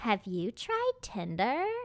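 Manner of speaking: put-on terrible, swooping, sing-song girl voice. Retelling what a girlfriend asked, a terrible impression of a friend. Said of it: "that's probably a terrible impression of them".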